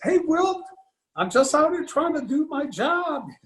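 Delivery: cracking voice. Retelling what he said to someone during a game, imitating his voice cracking. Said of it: "my voice sort of breaks".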